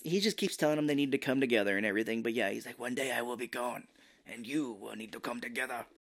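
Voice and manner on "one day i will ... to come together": put-on smoky zen master voice, quieter. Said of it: "Zen master-ish".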